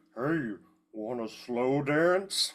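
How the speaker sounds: garbled, distorted-sounding speech. Narrating a game scene where an illusion speaks to someone: garbled Ophelia illusion voice. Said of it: "you just hear this garbled voice".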